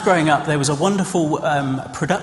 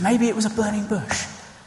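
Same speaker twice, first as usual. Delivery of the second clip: ordinary delivery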